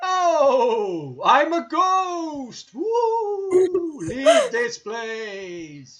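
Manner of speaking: very high, booming, swooping, echoey ghost wail. Playing a ghost that the others hear, in a big echoey ghost voice. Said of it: "You hear a big, uh, echoey voice".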